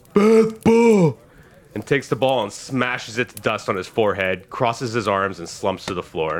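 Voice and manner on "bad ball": very high, shrill, loud, scolding giant scream. Narrator voices a giant humanoid losing at cup and ball: screaming giant. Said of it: "The giant humanoid screams".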